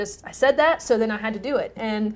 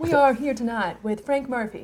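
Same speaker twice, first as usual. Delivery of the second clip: lowered, grave, serious news anchor voice; 2 semitones higher than usual. Practicing a line as a tv news anchor: lowered, serious news anchor voice. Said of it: "it's like lowering your voice a little bit".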